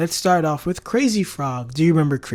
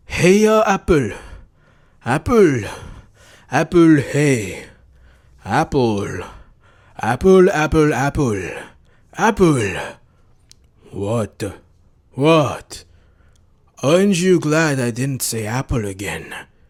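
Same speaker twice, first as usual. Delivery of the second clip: slow put-on anime character voice; 3 semitones lower, 4 dB louder than usual. Quoting a talking orange's lines, but in an anime character voice. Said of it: "I say it in an anime character voice".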